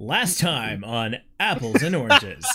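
TV recap-style announcer voice. Reading a series script aloud, opening the episode recap in an announcer voice. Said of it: "Announcer voice".

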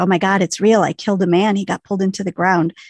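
normal talking voice

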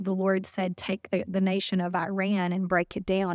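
ordinary talk

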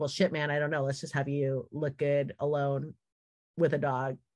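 ordinary talk

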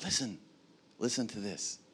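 hushed, very quiet, little whispery voice. Showing how a parent says something important to their kids: little whispery voice. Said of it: "You get that kind of little whispery voice".

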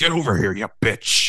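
affected, put-on character voice, calling out. Retelling how he beckoned the speaker's wife across the room, in the Freddy voice. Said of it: "he put on the Freddy voice".

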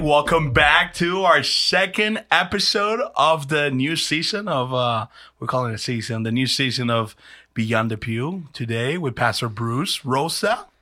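energetic host-style announcer voice. Opening the new season's second episode of the show, in an announcer host voice. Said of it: "That's my host voice".

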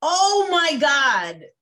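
high-pitched, gasping, mock shocked cry of disbelief. Retelling own reaction while watching: imitating own shocked scream. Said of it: "I was screaming, literally like".

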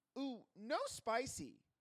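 put-on very high, loud, childish baby-talk voice. Retelling what a rich customer says when offered a margarita: imitating a woman talking like a five-year-old. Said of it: "reverts back to five years old".

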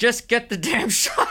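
very high-pitched, drawn-out shouting yell. Recalling shaking in a creek during a shoot, retelling a yell to the camera. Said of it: "I'm yelling to the camera".

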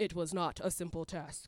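very deep, low, dramatic storyteller narrator voice. Telling the church about a pharmacy errand, the speaker switches to a narrator's voice. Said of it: "Cue narrator's voice".

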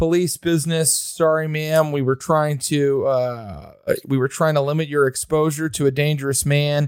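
ordinary delivery

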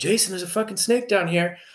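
put-on hollering, pitched high. Retelling spotting a snake at night, retelling a yell. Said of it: "I yelled at this dude".

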